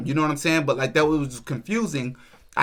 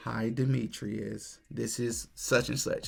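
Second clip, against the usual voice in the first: play-acted heavy, down-sounding, slow voice; 4 semitones lower, 11 dB quieter than usual. Retelling a phone call from a director: imitating someone sounding down. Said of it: "she sounded very down".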